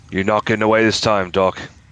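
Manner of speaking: put-on loud Australian accent coming out of nowhere. On his game turn, a character taunts Doctor Elric, in an Australian accent. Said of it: "That was an Australian accent for some reason".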